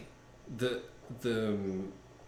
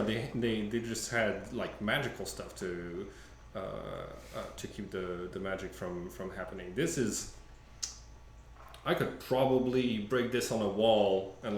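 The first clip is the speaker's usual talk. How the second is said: ordinary talk, nothing marked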